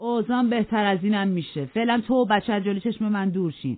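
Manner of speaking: mocking, sneering, derisive. Narrator reads an angry man's words to a woman and a child, mocking. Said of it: "با تمسخر گفت".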